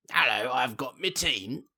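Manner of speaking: put-on British villain voice. Joking about a Doctor Doom scene: British Doctor Doom voice. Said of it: "British Doctor Doom".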